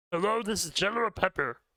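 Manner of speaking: very high-pitched cartoon dog character voice. Imitating a game character's line from Star Fox Adventures: General Pepper voice. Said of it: "He kinda sounds like that in Star Fox Adventure".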